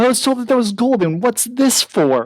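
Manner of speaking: very high-pitched, enraged, furious outburst. In a tabletop game scene, the game master voices a character who is very angry. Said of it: "and he is very angry. He's like".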